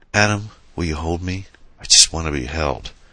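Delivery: soft, hushed whisper. Narrator voices a woman speaking to the man beside her, soft whisper. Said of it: "She whispered softly".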